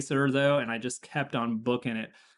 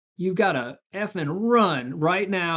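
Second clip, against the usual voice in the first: put-on yelling and cursing, higher and louder; 6 semitones higher, 5 dB louder than usual. Retelling how an official yelled race orders: imitating someone yelling and cursing. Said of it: "she's yelling and cursing at me".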